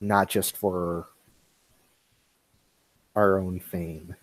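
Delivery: very quiet, low, soft, gentle murmur. Playing a character in a group scene, very quiet and soft. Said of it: "very quiet and very softly says".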